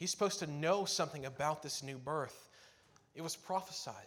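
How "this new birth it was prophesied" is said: ordinary talk, nothing marked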